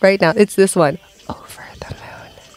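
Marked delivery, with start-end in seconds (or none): 1.3-2.6 soft whisper under the breath. Whispering a guessing-game phrase so the others cannot hear: whispering. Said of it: "whisper it now".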